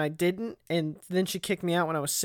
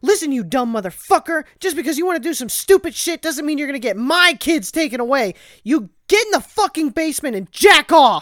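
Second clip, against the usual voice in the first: shrill, very loud screaming at full volume; 8 semitones higher, 9 dB louder than usual. Retelling how a woman screamed at a man, imitating a woman screaming. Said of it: "she like starts screaming at him".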